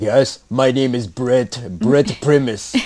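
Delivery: very slow, dragged-out bad Austrian accent. Imitating a movie star introducing his character: bad Arnold Schwarzenegger accent. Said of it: "I can't do an Arnold accent".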